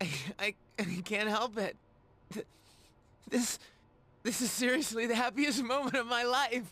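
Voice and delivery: tearful, high-pitched speech while crying through the words. Answering a character who asks why they are crying: crying while talking. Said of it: "hey, why are you crying?".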